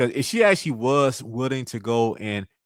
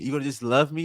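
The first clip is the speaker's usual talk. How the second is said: mock begging, pleading, higher pitch; 3 semitones higher than usual. Retelling how a contestant asked the question: imitating pleading. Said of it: "basically pleading and, and begging".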